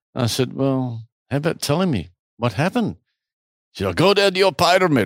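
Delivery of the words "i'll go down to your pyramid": bad, put-on German accent. Retelling what a man said in a story, acting it out in a bad German accent. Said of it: "in my worst German accent".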